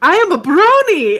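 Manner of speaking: put-on very slow, loud, heavy, thick Japanese accent. Retelling a man who showed them his phone, in a thick japanese accent. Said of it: "he's like very thick accented Japanese".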